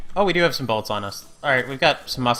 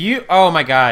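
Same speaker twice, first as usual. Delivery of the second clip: sudden loud outburst of shouting; 2 semitones higher, 7 dB louder than usual. Player yells on seeing someone who has what the group needs. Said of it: "Sorry to yell".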